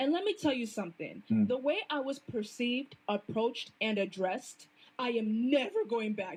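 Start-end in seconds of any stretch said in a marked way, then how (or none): 5.0-6.4 voice breaking and cracking mid-line. Describing being treated differently after dressing modestly, voice cracking. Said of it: "You hear that voice crack?".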